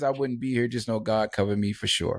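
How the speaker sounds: ordinary delivery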